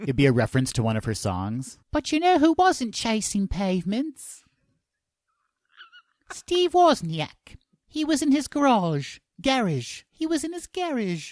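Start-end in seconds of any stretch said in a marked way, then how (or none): 1.9-11.3 terrible put-on Cockney accent, very high. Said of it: "our terrible, terrible accents".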